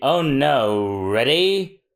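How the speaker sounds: very slow put-on voice. Pretending to be Mister Four just hit by the slow beam: slowed-down Mister Four voice. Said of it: "I pretend to be Mister Four".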